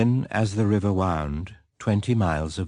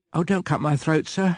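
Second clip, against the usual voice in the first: terrified pleading, pitched up; 8 semitones higher than usual. The narrator, seized by the chin by a fearful man, begs him, pleading in terror. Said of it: "I pleaded in terror".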